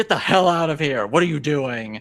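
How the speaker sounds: put-on authoritative yell. Retelling swinging the door open on a woman looking into her house, retelling an authoritative yell. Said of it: "yell in my most authoritative voice".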